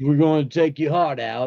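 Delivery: put-on Long Island accent. Imitating how a doctor might sound before surgery, in a Long Island accent. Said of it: "some Long Island accent going".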